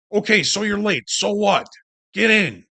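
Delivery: urgent, insistent yelling, pitched high. Explaining trading impulse, voicing what impulse yells at us, mock yelling. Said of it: "impulse yells at us".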